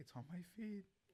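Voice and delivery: put-on terrified, frightened, high-pitched voice. Retelling how someone answered his older brother's question: acting out a scared reply. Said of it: "all scared".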